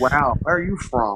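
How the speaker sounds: put-on laid-back drawl. Retelling a woman asking where he's from, the speaker does an Owen Wilson impression. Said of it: "Like uh, Owen Wilson".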